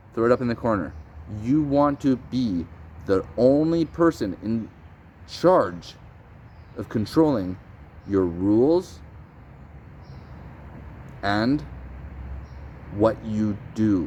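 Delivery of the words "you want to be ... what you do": slow, deliberate, halting, breaks inside phrases. Speaking to viewers so they really hear it, said slowly. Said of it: "Said it slow because I want you to hear it".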